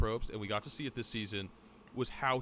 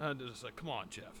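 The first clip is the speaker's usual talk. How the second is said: ordinary talk, nothing marked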